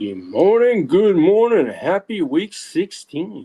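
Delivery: very slow, calm public radio announcer voice. Greeting the others at the start of the show: NPR radio voice. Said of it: "He's got his N P R radio voice on today".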